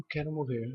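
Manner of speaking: hushed, despairing, very soft low murmur.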